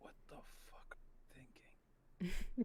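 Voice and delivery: hushed whisper. As Alejandro, turning to Colette after she takes her phone out: whispering. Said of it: "just whisper".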